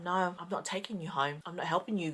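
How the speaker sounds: quiet smirking tone.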